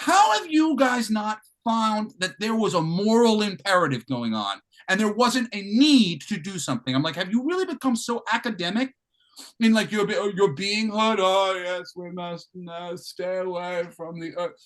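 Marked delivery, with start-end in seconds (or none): none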